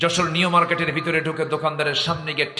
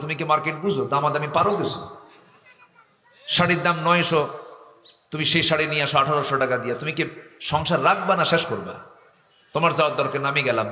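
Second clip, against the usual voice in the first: normal talking voice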